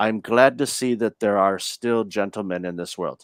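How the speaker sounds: put-on strong French accent. Retelling what a man said to him, imitating his strong french accent. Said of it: "he had a really strong French accent".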